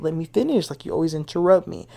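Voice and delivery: ordinary talk, nothing marked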